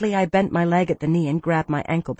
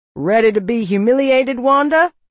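loud, bright, mocking, taunting tone; 6 semitones higher, 6 dB louder than usual. [name] goads Wanda before their game begins, taunting. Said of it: "[name] taunted".

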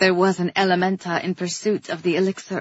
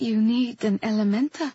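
ordinary delivery, nothing marked

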